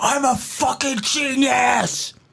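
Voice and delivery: very high, drawn-out ranting meltdown. Retelling recordings of a comic's meltdowns on stage: imitating Brett's on-stage freakout. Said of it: "recordings of him being like".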